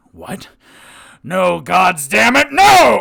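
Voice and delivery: furious, very loud, ragged, raw yell. Voicing a villain whose fire attack failed: furious shouting. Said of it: "And then furious".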